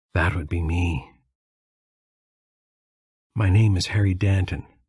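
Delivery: raspy, rasped-out stage whisper. Narrator reading a bedridden man's reply from across the room, quiet raspy whisper. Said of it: "a quiet, raspy voice".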